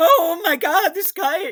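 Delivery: high, loud, worked-up frantic excitement. Retelling how a guy reacted while going nuts: imitating someone going crazy. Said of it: "He's just going crazy".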